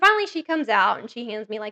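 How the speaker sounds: ordinary talk, nothing marked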